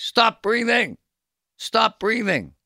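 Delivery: very loud, high-pitched, shrill screaming. Retelling a father behind him screaming at his kid, retelling a father's screaming.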